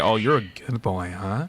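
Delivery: low, seductive, sultry voice. Speaker acting out someone coming at him; imitating a sultry voice. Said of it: "you come to me with a sultry voice".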